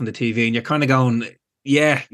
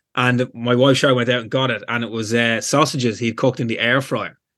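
normal talking voice

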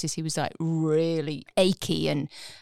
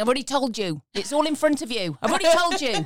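put-on Cornish accent, pitched up; 7 semitones higher, 3 dB louder than usual. Retelling what a grumpy past-life persona answered under hypnosis: imitating a Cornish accent. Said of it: "they were speaking in a Cornish accent".

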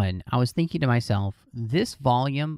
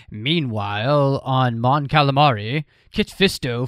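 loud, deliberate, announcing delivery; 5 dB louder than usual. Describing how the episodes jump between stories: Clone Wars announcer voice. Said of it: "you could almost hear the announcer voice from the other Clone Wars series".

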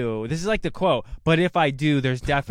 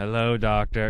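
put-on robot voice; 4 semitones lower than usual. Discussing an actress's roles, doing her Nebula robot voice. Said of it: "She's that same robot voice".

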